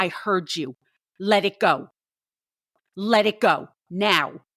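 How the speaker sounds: put-on measured half-yell, drawn-out, words spaced out. Retelling a late-night argument with the boss: retelling a scream. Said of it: "I screamed at him".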